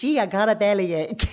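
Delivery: fake American accent.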